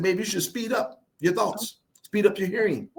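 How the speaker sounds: usual speaking voice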